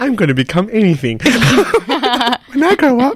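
tiny embryo voice, very high and swooping. Podcast co-host imagining frozen embryos talking: embryo voice. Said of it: "Is that your embryo voice".

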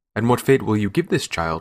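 ordinary delivery

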